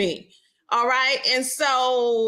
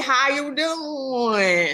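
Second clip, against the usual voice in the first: long Southern twang, doing drawn out. A Southerner demonstrating the twang on a greeting, long Southern drawl. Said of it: "It's long. That's just what we do in the South".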